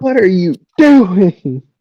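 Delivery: yelling loudly, pitched high. Recalling watching the game in the office, retelling yelling at the TV. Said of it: "I'm yelling at the I'm yelling at the T V".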